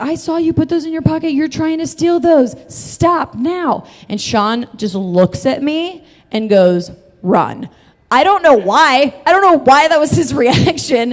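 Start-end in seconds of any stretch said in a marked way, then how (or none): 0.0-3.9 high, angry, accusing yelling. Retelling a store clerk catching his companion pocketing something, imitating clerk yelling angrily. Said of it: "he starts yelling like".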